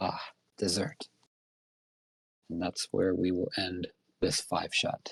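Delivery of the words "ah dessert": villainous muttering under the breath. Voicing Lady Caroline as a man is pushed in: muttering under her breath. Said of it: "Grinning, Lady Caroline mutters under her breath".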